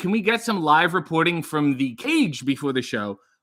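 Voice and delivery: ordinary talk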